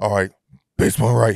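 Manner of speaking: put-on deep bass voice. Retelling calling the punt in the huddle, in a Batman voice with bass. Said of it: "put some bass in your voice".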